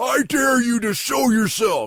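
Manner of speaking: loud, very high, macho, taunting wrestler voice. Retelling how a ghost hunter taunts a ghost: imitating Zach as a wrestler. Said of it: "he gets all wrestler on him".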